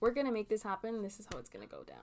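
put-on blunt, take-charge, firm, direct, animated. Describing a guest's way of talking, imitating someone direct. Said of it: "I love how direct you are".

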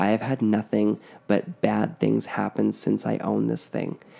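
ordinary delivery

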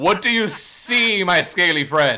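way too loud. Asking a scaly friend what they see in a still room, too loud. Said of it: "you gotta keep your voice down".

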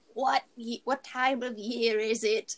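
slow, exaggerated very old voice. Retelling a movie scene where Chochim asks the men something: Chochim's peak old voice. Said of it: "peak old voice".

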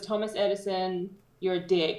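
normal talking voice

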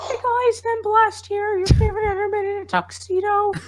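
very high-pitched voice pushed way up, cracking. Trying to recall an old character's voice and introducing yourself as him, in a really high-pitched Blast voice. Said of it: "Just do something really high pitched".

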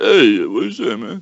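slow, drawn-out drawl on every word. Playing a movie guessing game, doing a Sylvester Stallone impression. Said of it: "that's my Sylvester Stallone".

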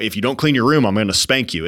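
stern, threatening parental tone of voice. Showing the tone a parent uses with kids: parent threatening a child. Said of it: "It's this, you know".

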